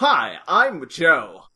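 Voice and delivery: put-on American accent, loud. Voicing a character from The Tomb of the Cybermen: really fake American accent as Joe. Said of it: "he's American with a really, really fake American accent".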